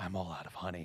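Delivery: put-on whisper. Retelling a game scene where Peter whispers a joke: imitating a whisper. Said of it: "he whispers, he's like".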